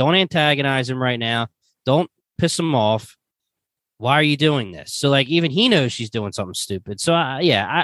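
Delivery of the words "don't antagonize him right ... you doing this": ordinary delivery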